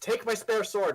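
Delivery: loud, high-pitched, hollered yell in an acted voice. Playing a character in a fight, yelling to an ally: yelling in character. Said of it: "I yelled at Annalise".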